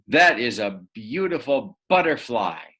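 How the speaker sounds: forceful, strong, emphatic exclaiming tone. Teaching punctuation, reading an example sentence as a strong exclamation. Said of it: "if you really want it to be strong".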